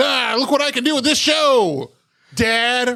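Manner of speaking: showing-off taunt. Acting out rubbing it in a dad's face: mock gloating at dad. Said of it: "rub it in my dad's face".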